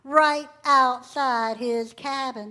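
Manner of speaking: plain reading voice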